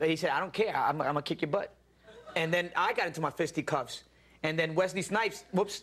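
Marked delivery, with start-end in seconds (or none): 0.3-1.7 put-on American Southern accent. Retelling what an actor on a movie set said: imitating a southern accent. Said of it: "he has a southern accent".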